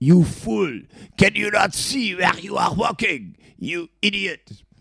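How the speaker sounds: put-on thick French accent, pitched very high. Retelling what a man said after kicking a door into him, strong french accent. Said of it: "he said with a healthy French accent".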